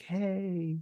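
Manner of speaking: fake-nice voice, high and stretched. Imitating a film character's fake niceness after the scene is described: imitating fake nice voice. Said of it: "that the voice that he puts on".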